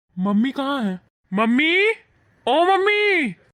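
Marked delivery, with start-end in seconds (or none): 1.4-3.3 high, loud shouted call. Calling loudly for his mother on coming home: shouting for mother. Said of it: "अरे तुम इतना चिल्ला क्यों रहे हो?".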